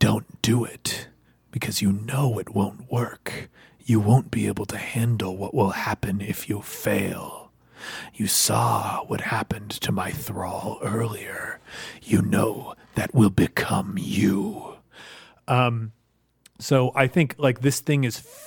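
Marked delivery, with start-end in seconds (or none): 0.0-14.7 low, hushed, ear-close whisper. Narrating a tabletop scene, voicing the wizard who steps up to the player, whispering in the ear. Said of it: "the wizard like steps up to you and whispers in your ear".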